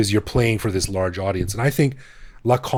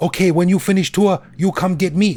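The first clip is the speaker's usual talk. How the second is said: mock tour-guide voice, broken English, higher pitch; 9 semitones higher, 4 dB louder than usual. Retelling how a tour guide in a movie spoke to the hero: imitating a tour guide's broken english. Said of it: "this girl is like".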